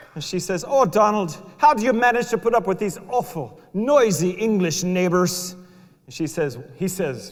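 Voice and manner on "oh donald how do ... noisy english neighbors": raised, high-pitched put-on Scottish accent. Telling a joke, voicing donald's mother, scottish accent. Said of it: "That's my Scottish accent".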